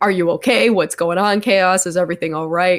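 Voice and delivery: put-on frantic, panicked tone. Retelling friends checking after a face plant: imitating frantic friends. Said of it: "as my two friends are frantically like".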